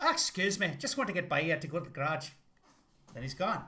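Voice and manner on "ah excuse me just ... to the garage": put-on Irish accent. Acting out Mitch leaving for the garage: Irish-accented Mitch McConnell impression. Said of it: "maybe he's Irish".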